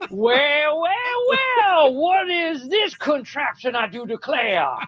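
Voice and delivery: put-on Southern gentleman accent. Hosts joking about a speech, one doing a fake Southern accent. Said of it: "That is the way Southern people talk".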